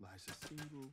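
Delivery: plain reading voice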